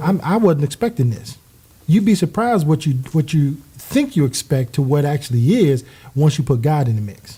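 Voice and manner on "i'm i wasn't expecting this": normal talking voice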